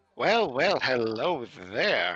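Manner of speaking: low halfling character voice. Voicing a halfling who looks toward the group: halfling voice. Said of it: "It's a halfling. And he'll kind of look at you and be like".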